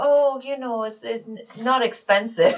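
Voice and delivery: soft, light put-on German accent. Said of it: "Her with her little German accent".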